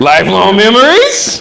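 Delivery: upward lilt at the end of "memories". Showing how to echo someone's words: rising at the end, like a question. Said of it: "I'm raising it up at the end so it comes across straight as a question".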